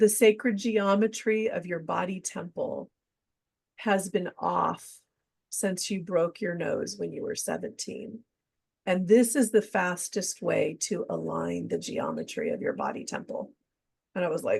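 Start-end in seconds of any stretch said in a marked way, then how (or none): none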